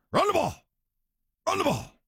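very high, fired-up, hyped athlete voice. Imitating Richard Sherman before a segment on running the ball: Richard Sherman impression. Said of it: "channel my inner Richard Sherman".

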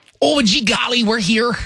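very high-pitched put-on Michigan accent. Mocking how a candidate sounds: mocking put-on Michigan accent. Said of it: "if everyone sounded like her".

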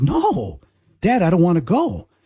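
crying through tears, slow and swooping. Retelling their reply to their dad, imitating their own crying. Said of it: "I start crying".

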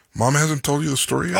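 ordinary delivery

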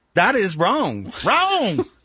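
a little twangy Southern drawl, swooping high. After another speaker notes a southern drawl, redoing the remark in a southern accent. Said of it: "slide into a Southern accent".

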